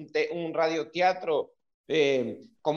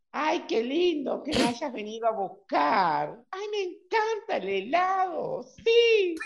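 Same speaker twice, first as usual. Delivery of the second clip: very high, faked, put-on woman's voice; 10 semitones higher than usual. Acting a woman being invited out for ice cream: put-on woman's voice. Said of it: "tratando de hacer la voz de una mujer".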